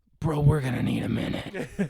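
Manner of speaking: put-on, dead-tired, exhausted voice. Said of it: "we're fucking dead tired".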